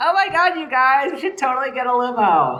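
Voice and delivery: put-on high-pitched preteen girl voice. Imitating a group of preteen girls on request, put-on preteen girl voice. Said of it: "said this line in this voice".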